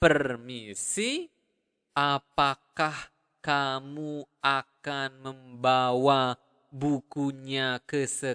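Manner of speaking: very slow, word by word, kamu drawn out. Repeating the example Indonesian sentence after saying it at natural speed, slowed down. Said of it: "If I slow it down".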